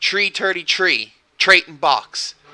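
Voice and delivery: put-on heavy Jamaican accent, th as t, high and slow. Retelling how a rude customer played lottery numbers: imitating a thick jamaican accent. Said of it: "because he had that thick Jamaican accent".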